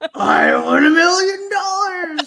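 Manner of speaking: high, loud character voice with every word stretched out. Doing an impression of Rupert when asked: Rupert impression.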